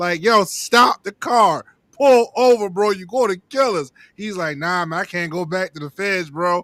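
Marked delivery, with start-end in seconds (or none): 0.2-3.9 urgent, desperate, begging tone. Retelling the driver's homeboy during a police chase, imitating someone pleading. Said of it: "his homeboy is pleading with him to pull over".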